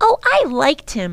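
said defensively. Answering a companion who called the man nutty, speaking defensively. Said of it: "Lindy said defensively".

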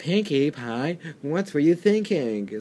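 lightly sarcastic, reproachful tone. Recapping a cartoon episode, quoting a pony character: imitating a sarcastic pony. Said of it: "it kind of sounds a bit sarcastic".

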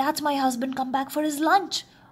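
gasped out. The giantess, speaking to Jack as the giant arrives, gasping. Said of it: "gasped the giantess".

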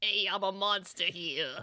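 put-on low-pitched New York kid accent. Describing a favorite monster character, doing his New York kid voice. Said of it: "he sounds kind of like a New York kid".

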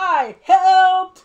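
high, loud proud yelling.

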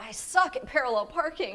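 low muttering under breath. Retelling a failed parallel parking attempt: imitating muttering under breath. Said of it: "under my breath".

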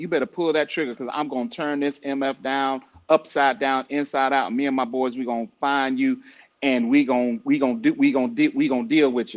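ordinary delivery

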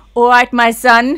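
bellowed, terrible German-tinged Cockney accent. Joking that German spies were obvious: worst German Cockney accent. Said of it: "I bet they had the worst German Cockney accents".

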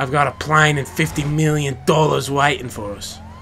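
deliberately terrible fake Australian accent.

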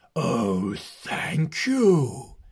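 delighted, pleased, richly animated, swooping delivery. Narrator reading a dragon thanking the guests at his birthday, thundering bass with pleasure. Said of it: "he thundered with pleasure in a bass".

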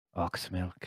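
whispered line. Leaning in close to a character's ear in the game: whispering. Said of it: "lean in close and whisper in his ear".

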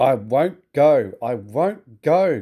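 grumbling dragged out very slowly, stubborn. Reading a story, an engine refuses to be turned around, grumbling. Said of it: "grumbled Gordon".

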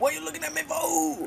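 very high, creaky, barked put-on voice.

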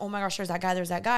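put-on panicked voice. Retelling seeing someone while driving away: retelling own panicked words. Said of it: "getting nervous. I start panicking".

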